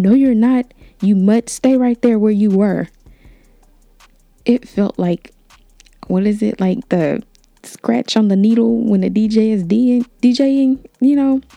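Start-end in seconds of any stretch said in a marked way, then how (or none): 0.0-2.9 yelled with the voice rising. Recounting how she turned to the speaker and raised her voice: imitating her yelling. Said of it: "She started to raise her voice and she yelled".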